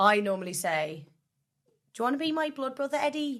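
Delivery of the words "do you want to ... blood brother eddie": light Scouse accent, pitched up. Asked for a Scouse phrase, the speaker offers their usual one, going a little Scouse. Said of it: "And then I go a little bit Scouse".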